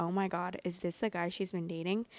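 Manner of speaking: normal talking voice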